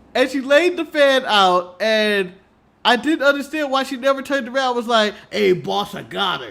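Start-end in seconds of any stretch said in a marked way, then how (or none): 5.3-6.5 rough, creaky, raspy cartoon henchman voice. Speaker imagines the woman turning to her boss, in a Rocksteady-like voice. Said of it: "I don't know why that would be the voice".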